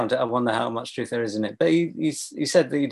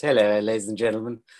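put-on smarmy TV host voice, faster; 3 semitones lower than usual. Describing a comedy scene, quoting a performer's lapse into a smarmy BBC host voice. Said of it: "lapse into a sort of smarmy BBC host".

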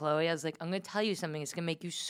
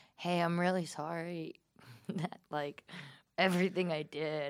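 put-on tearful, near-crying, sorrowful voice. Retelling an apology the speaker once gave, retelling a tearful apology. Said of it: "You're gonna cry here?".

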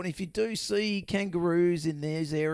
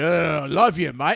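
put-on drunk voice, louder; 8 dB louder than usual. Acting out two drunk kangaroos in a paddock: acting a drunk kangaroo. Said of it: "these two drunk kangaroos going".

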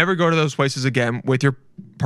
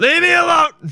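put-on screaming, higher and louder; 5 dB louder than usual. Acting out a man in the shower told to leave, mock screaming.

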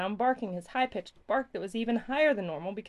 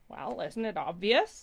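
surprised, taken aback. Professor Kookie answers children asking what his machine does: surprised.

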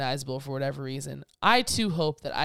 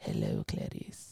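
soft, hushed, threatening, menacing whisper; 8 dB quieter than usual. Retelling a story about an iconic movie line on screen, imitating Anthony Hopkins' menacing whisper. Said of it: "very menacingly whispered".

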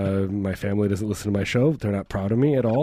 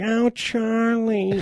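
very high, motherly voice; 13 semitones higher than usual. Imitating how his mother talked: imitating his mother's voice. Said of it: "Mom's like".

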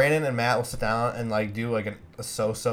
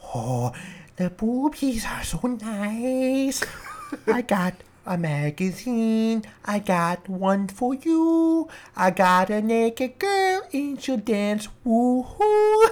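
very high, very slow, stretched-out voice; 11 semitones higher than usual. Doing an impression drawn from a list: Adam Sandler voice. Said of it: "Adam Sandler talks about porn".

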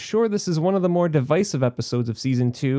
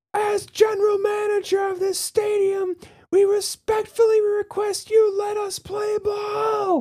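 very high shout with the word "ball" drawn out. Retelling an off-screen voice at a baseball stadium in a film, imitating a man shouting. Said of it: "he's shouting like".

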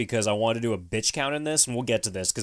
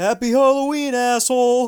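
jeering yell, shrill and very high; 12 semitones higher, 8 dB louder than usual. Telling a story, the speaker acts out someone yelling at an old man, retelling a yell. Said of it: "And Stooge yells out".

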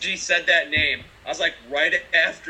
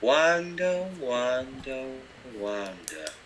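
villainous, evil-sounding tone of voice; 3 semitones lower, 5 dB quieter than usual. Quoting Agatha calling out the name, Agatha's mock-evil "Wanda". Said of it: "says Wanda in that, like, evil tone of voice".

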